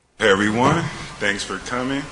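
very high, bright voice with audible smile. Opening a statement to everyone who came to hear it, smiling voice. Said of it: "You can hear the smile in his voice".

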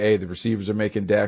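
ordinary talk

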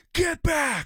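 put-on, very high, shrill, top-of-lungs screaming. Telling how a dad dropped to one knee before young boys: retelling a scream. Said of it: "he screams at the top of his lungs".

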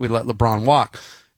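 normal talking voice

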